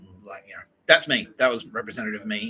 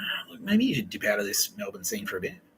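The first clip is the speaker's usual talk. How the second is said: hushed, soft stage whisper, close in the ear; 3 dB quieter than usual. Retelling advice someone gave about leaving the melbourne scene: imitating a half-whisper. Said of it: "whispered in my ear".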